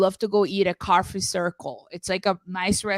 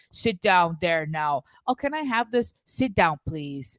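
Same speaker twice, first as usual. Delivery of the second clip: play-acted, grudging, passive aggressive tone. Retelling how the person welcoming guests spoke: imitating a passive aggressive host. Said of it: "like a passive aggressive".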